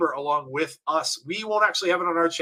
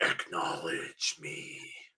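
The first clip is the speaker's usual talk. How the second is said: breathy whispered superhero-style growl; 13 semitones lower, 10 dB quieter than usual. Repeating a line from someone who growls it: imitating a growl. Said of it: "growls, almost like Batman".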